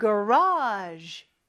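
garage said with its pitch accent, stressed.

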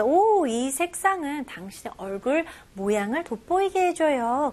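normal talking voice

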